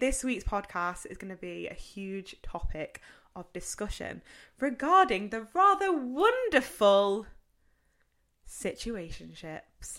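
dripping sarcasm on wonderful, big sing-song swoops. Podcast host introducing this week's topic to listeners, sarcastic. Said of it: "I really hope you got my sarcasm from the word wonderful".

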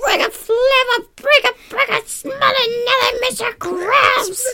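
weird cartoon voice, very high pitch. Repeating a cartoon line, imitating SpongeBob saying it weirdly. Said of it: "she says it so weird".

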